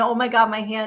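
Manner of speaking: usual speaking voice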